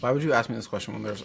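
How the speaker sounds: talking with mouth full. Answering a question about the week while eating: talking with mouth full. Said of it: "when I have a mouthful of food".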